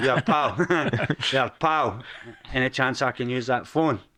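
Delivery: put-on tough Glaswegian accent. Walking up to a group of strangers to ask to use a phone, in a hard glaswegian accent. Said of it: "I put in the Glaswegian accent".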